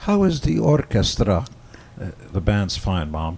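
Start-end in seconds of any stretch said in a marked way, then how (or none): 0.0-1.5 put-on heavy Hungarian accent, laid on thick, high, raised. Retelling his mother's question to him, in a thick hungarian accent. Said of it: "thick Hungarian accent".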